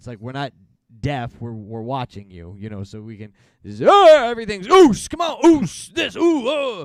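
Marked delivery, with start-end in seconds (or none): 4.7-6.8 mock wrestler-style yell, higher, louder, slower. Complaining that wrestlers yell everything in promos: imitating wrestlers yelling. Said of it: "Everything's yelling".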